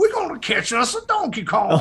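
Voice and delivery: put-on full, swooping, sing-song Louisiana bayou accent. Imitating a cartoon villain from an old show: King K. Rool Louisiana bayou voice. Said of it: "sound like they run a, uh, like, po' boy stand down in the bayou".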